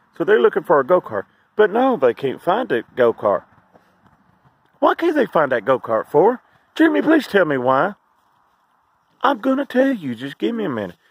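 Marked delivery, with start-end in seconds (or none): 9.2-10.9 mocking, dripping with sarcasm, sing-song and pitched up. Speaker answers their own question to Jimmy, sarcastic. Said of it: "I'm being sarcastic right now".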